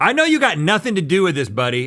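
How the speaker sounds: aggressive, pushy tone. Speaker retells how he addressed a teen employee, mock-aggressive tone. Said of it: "I started with that kind of aggressive tone".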